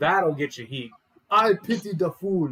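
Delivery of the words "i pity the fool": slow, high, tough-guy put-on Nigerian accent. Making up a character, the speaker tries a Mister T doppelganger voice: Mr. T impression, Nigerian accent. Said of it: "with the Nigerian accent".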